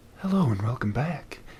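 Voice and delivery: soothing, calm radio host voice. Saying a show name sounds like a public radio program, doing an NPR host impression. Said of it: "let me do my best N P R impression".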